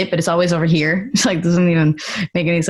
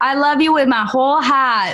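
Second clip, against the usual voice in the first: put-on Massachusetts accent, pitched up, r dropped in "heart"; 8 semitones higher than usual. Making fun of how people in Massachusetts say a phrase, Massachusetts accent, dropped R's. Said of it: "people in Massachusetts say that... they don't pronounce the R".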